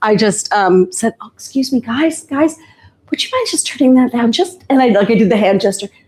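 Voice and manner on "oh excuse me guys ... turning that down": very quiet, hushed, careful and polite tone. Retelling asking guys to turn it down: retelling own very quiet request. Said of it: "So I very quietly".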